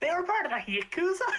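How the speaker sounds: blurted out at full volume, very high. A character repeats aloud what was just told in secret: full-volume exclamation. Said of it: "Doc says in full volume".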